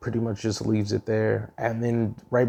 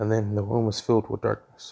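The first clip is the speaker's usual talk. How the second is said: normal talking voice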